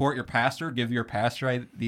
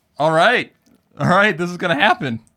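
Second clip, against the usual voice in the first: very loud, rushed, overexcited outburst; 6 semitones higher, 11 dB louder than usual. Reacting to news that a guest has Discord: excited and too loud. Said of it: "you got too excited, man. You're, you're peaking already".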